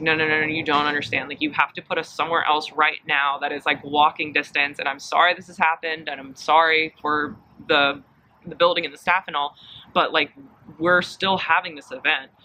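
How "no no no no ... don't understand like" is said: plain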